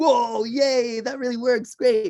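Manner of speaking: put-on very high, gleeful, delighted child voice. Acting out a kindergarten child who gets a candy: imitating a delighted child. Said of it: "He's like".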